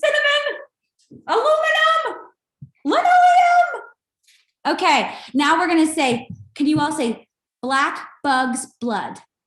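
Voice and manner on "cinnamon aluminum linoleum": very high, timid, unsure and a little fearful. Leading a group speech exercise, the speaker says the three words a little fearful. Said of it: "a little fearful, a little scared".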